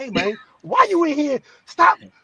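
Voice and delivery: high, fed-up, annoyed, mad voice. Retelling how Samantha scolded him for joking in the hospital: imitating someone getting mad. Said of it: "Samantha got mad at me and was like".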